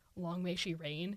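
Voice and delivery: ordinary talk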